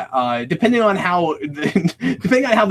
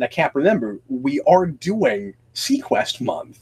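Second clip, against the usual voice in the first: super deadpan, straight, no joking. Retelling what a weekly movie-night guest always says, super deadpan. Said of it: "very serious, super deadpan, says".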